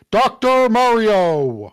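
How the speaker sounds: booming voice with one word stretched out. Announcing a character name, in a Smash Bros announcer voice. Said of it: "like the Smash Bros announcer".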